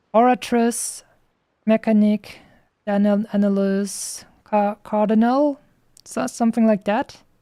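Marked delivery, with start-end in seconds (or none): 0.1-5.6 slow, careful, sounded-out speech in an English accent. Pronouncing names not in a French accent: English accent. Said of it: "Let me try and pronounce this in an English accent".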